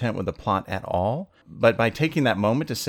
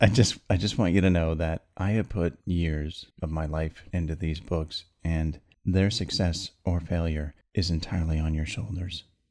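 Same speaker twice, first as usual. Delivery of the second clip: serious voice, much lower register; 5 semitones lower than usual. Addressing Dorothea directly about the books, getting serious in a lower register. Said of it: "I'm going to get serious here".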